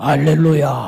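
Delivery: booming, put-on pious, solemn 알렐루야. Mimicking how supposedly spiritual people sound, put-on holy voice on 알렐루야. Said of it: "저처럼 이렇게 나긋나긋한 목소리면 안 되고 알렐루야 이렇게 목소리가 이러면 아 거룩하다".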